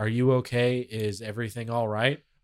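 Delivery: very low, bland, flat newsreader monotone. Retelling a news clip, the station anchor asks the live reporter, imitating a bland newsreader. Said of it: "Really like bland too".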